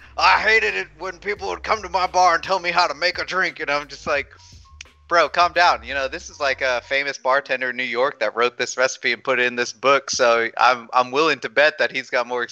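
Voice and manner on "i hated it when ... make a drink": put-on pirate voice, much higher. Speaker quotes a bartender complaining about customers, in a pirate voice. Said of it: "you kind of made him sound like he was a pirate".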